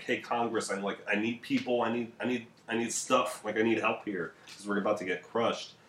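ordinary talk

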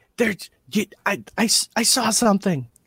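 muffled whisper, as if behind hand. Voicing a caller on the phone to Reggie: muffled whisper behind hand. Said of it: "whispering and covering the phone with his hand".

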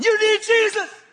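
yelling at full force, pitched very high. Retelling a beach encounter, yelling at the other man: retelling own yelling. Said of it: "and I'm yelling".

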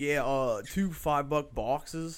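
terrible put-on Pittsburgh accent. Quoting him ordering at Taco Bell: imitated Pittsburgh accent. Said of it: "he had Pittsburgh accent. He'd be like".

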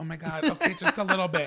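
put-on, acting all humble and modest. Retelling a film scene where a writer is asked to read: imitating Sintara acting humble. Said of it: "trying to be all humble".

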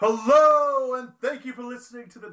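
very high, loud voice, stretched "hello", pitch way up. Opening the podcast as another host would: Chris Ryan style intro. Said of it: "I'm gonna do a Chris Ryan style intro".

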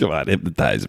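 put-on Philly accent, casual talking. Joking after looking up where Bacon is from, imitating Kevin Bacon's accent. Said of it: "he talks like that in every movie".

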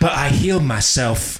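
badly done put-on English accent. Trying a line as an actor might say it in a movie: Simon Pegg accent attempt. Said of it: "how do you do that with a Simon Pegg accent?".

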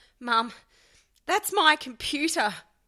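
panicked, terror-struck, shrill, high-pitched terrified cry. Reading a story aloud, a boy panicking: high-pitched with terror. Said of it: "his voice has gone all high-pitched with terror".

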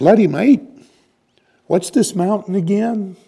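very high, loud put-on Australian accent. Retelling what an australian said among the drinkers up on the mountain: australian accent. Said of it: "And there was an Australian".

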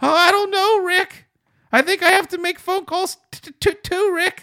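very high, pushed-up cartoon voice. Acting out a deskmate's reply while making phone calls, Morty voice. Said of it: "he's good at doing the Morty voice".

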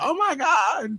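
mock very high, thrilled fangirl shriek. Retelling seeing it in person for the first time, retelling excited screaming. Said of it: "I literally started screaming like a girl at a [name] concert".

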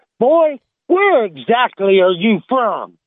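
put-on angry voice, slow, high. Telling a joke, voicing the warden when he's mad: mad game warden. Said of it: "he's mad then".

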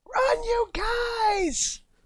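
high, slow, drawn-out yell. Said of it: "yell out".

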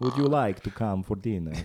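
loud, cheesy Hungarian count accent. Showing how to mock the hungarian accent, cheesy hungarian count accent. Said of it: "the cheesy like count accent".

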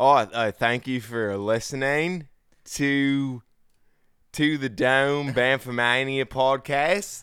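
put-on imitation Australian accent. Podcast outro done in an imitation Australian accent. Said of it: "our best idea of what we think an Australian accent is".

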